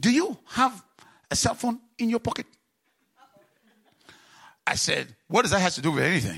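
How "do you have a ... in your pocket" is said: put-on Singaporean English accent, pitched up. Speaker quotes a singaporean lady asking him a question, in an attempted singaporean accent. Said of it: "I'm going to try to make a Singaporean accent".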